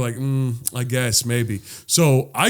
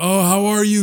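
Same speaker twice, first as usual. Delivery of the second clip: put-on drunk woman's voice, higher; 8 semitones higher than usual.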